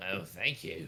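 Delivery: loud little goblin woman character voice. Voicing a character handed six gold for two drinks, little goblin woman voice. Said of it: "like little goblin woman".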